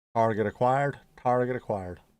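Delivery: bad fake American accent. Playing a game with others, putting on a bad American accent. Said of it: "That's a shit American accent".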